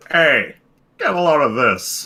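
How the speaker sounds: loud, belted character voice with swooping, swinging pitch. Showing someone how to do an Eggman line from Sonic Adventure, in a Joe Swanson voice. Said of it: "You can just do it like Joe Swanson".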